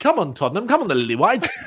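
put-on old-fashioned 1960s announcer voiceover voice. Cheering on football teams in an attempted accent, like a 1960s voiceover announcer. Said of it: "sounds like someone doing a voiceover thing from the 1960s".

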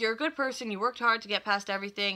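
ordinary talk

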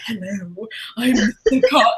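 breathy slimy character voice. Describing an audiobook narrator's character voices, doing her version of Mr. Collins: breathy, slimy Mr. Collins voice. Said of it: "really breathy and slimy".

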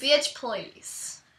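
put-on Southern drawl. Saying a line on request in a southern accent. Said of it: "In a southern accent".

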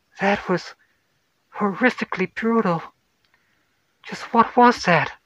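badly shaken, appalled, horrified voice, pitched high. A narrator reads a woman's question after a brutal death, shaken and horrified. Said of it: "completely shook and horrified".

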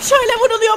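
high, loud, panicked crying out.

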